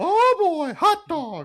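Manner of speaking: pitch way up and swooping. Imagining the auction being run by Mickey, the speaker exclaims in a Mickey Mouse voice. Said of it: "I would totally expect the auction to be in Mickey".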